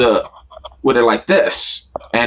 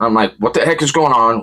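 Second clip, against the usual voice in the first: usual speaking voice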